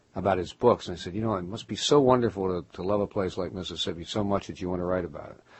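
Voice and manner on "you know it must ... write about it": usual speaking voice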